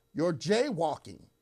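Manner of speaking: loud, high-pitched yell. Retelling a reply to an officer after nearly hitting him: retelling own shout. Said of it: "I shouted to him".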